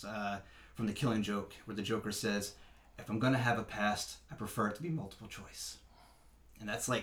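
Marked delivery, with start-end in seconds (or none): none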